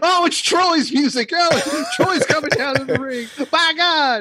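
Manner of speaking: very high-pitched screaming. Imagining a wrestling commentator announcing an entrance: Jim Ross screaming. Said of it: "Jim Ross screaming".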